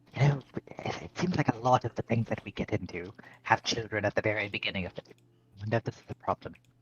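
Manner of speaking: hushed half-whisper. Half-whispering a worry to the party while following the tracks: half-whispering. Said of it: "I'm just gonna whisper once".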